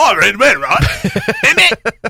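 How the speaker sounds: terrible put-on Cockney accent, very high, very drawn out. Showing how their english accent slides into cockney, put-on cockney accent. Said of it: "it comes down to".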